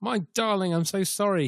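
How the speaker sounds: put-on high English accent tinged with Australian twang. Speaker retelling a man's phone call, english accent with australian twang. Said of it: "he says in his English accent now with an Australian twang".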